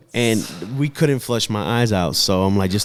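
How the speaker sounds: ordinary delivery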